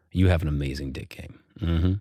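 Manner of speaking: exaggerated, mock deep, low, soothing, calming voice. Host starting a sponsor read, speaking to listeners: mock deep, soothing voice. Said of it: "Listen to my voice, my deep, soothing voice".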